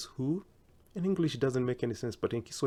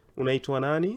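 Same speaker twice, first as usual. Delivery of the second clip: rising pitch at the end on nani; 4 dB louder than usual. Teaching Swahili question intonation: rising pitch on nani. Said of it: "it's a question, so the intonation has to go high".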